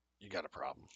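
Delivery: acted big burly pirate chief voice. Voicing the big burly pirate leader confronting a player: burly Trandoshan pirate leader voice. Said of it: "big, burly Trandoshan".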